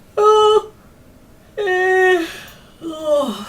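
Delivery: very high, loud yawn stretching out the words. Checking profit analytics while talking to an audience, yawning. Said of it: "Just yawning in your faces".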